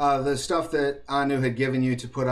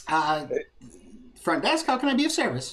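put-on high-pitched gnome voice, much slower; 5 semitones higher than usual. Playing the hotel front desk answering a guest's call, high-pitched gnome voice. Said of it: "Sounds high-pitched, probably either a child or a gnome".

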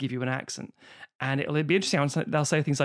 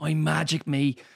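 put-on Dublin accent. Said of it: "I'll do a Dublin accent".

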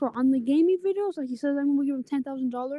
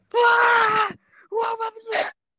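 acted very high-pitched yell with drawn-out ah; 9 semitones higher, 6 dB louder than usual. Retelling how his dad came into his room, imitating his dad yelling. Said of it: "started yelling".

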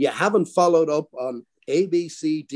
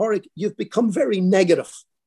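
put-on cheerful, friendly chiding tone, pitched up; 5 semitones higher than usual. Retelling what a coworker said on the factory floor: imitating a cheerful remark. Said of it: "in a very cheerful way".

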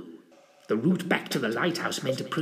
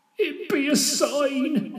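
very slow, very high, drawn-out begging, pleading voice; 14 semitones higher, 4 dB louder than usual. A servant speaks to his master again, pleading with him. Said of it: "pleaded Jethro".

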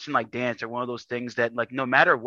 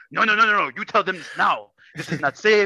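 put-on heavy Kenyan accent, higher pitch; 7 semitones higher, 6 dB louder than usual. Retelling your granddaddy's reply to you about a lifting limit, imitating a thick Kenyan accent. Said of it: "Thick Kenyan accent".

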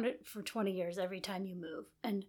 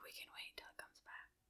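very soft whisper. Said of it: "Why are we whispering?".

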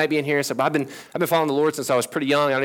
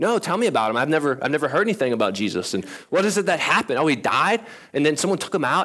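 normal talking voice

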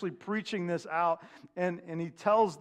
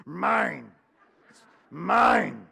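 loud, booming, swooping possessed-thing voice; 7 dB louder than usual. Imitating how kids say mine with attitude: imitating a possessed-sounding child. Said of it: "It sounds like you're some kind of possessed thing".

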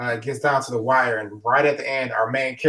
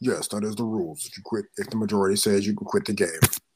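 put-on, low, quiet hoodie-guy voice; 4 semitones lower, 5 dB quieter than usual. Retelling how the game's facilitators answered about quitting, in a hoodie guy voice. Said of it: "That's my hoodie guy voice".

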